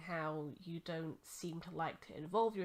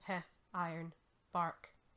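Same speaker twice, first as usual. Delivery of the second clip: ordinary talk, nothing marked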